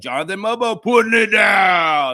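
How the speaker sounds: mock fired-up, loud, high yell, drawn out downward. Describing a woman in in-game ops calling a dunk, imitating her enthusiastic yelled call. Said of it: "yelling it like that".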